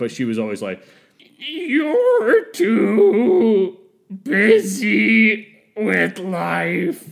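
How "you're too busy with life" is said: very high, very loud, very slow, shrill and drawn-out. Quoting what an ex-girlfriend always said, imitating Zelda's voice. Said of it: "I'm gonna get her voice wrong".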